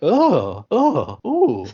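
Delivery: put-on, overdone, high, swooping excited little grunts. Imitating a game character's reaction to a good item: imitating Pizarro's excited grunts. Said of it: "some of his little grunts are just, uh, a little much".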